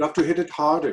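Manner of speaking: put-on German accent. Retelling what the director kept saying on set: German accent imitating Ulf. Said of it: "you're great with accents".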